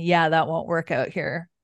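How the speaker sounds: acted-out laughing while speaking. Recounting a story where a woman threatens to call police, retelling a man laughing. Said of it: "the guy laughs".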